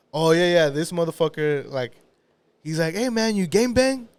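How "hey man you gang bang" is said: high, eager, friendly, bursting with enthusiasm. Retelling how a stranger at a corner asked him a question: imitating an enthusiastic question. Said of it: "he said it with such enthusiasm".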